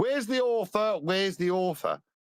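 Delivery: mocking, sarcastic, high-pitched yell. Shouting for the author in a clip a colleague posted, a sarcastic shout. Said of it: "of me shouting".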